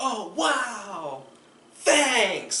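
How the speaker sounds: over-the-top grateful excitement, loud and high, stretched "wow". Showing how to thank a partner for small things: over-the-top grateful excitement. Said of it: "Just make her way too big of a deal".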